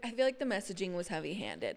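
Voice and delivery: ordinary talk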